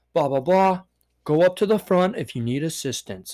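machine-like robotic computer voice. Retelling a guy's smartass reply, speaker mimics him talking like a computer. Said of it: "he starts talking like a computer".

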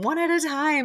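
shrill, high-pitched shouting. Retelling how the moped rental worker shouted at the women: imitating someone shouting. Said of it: "he was shouting at them".

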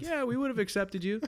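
high cartoon frog puppet voice. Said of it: "I can actually do a really good Kermit".

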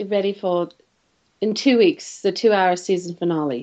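put-on British accent, read like a TV announcer. Announcing the season finale when asked to use a British accent.

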